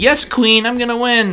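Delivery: dainty, delicate little voice. Retelling how a daughter first acted while learning a game: imitating a delicate daughter. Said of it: "at first she's all delicate".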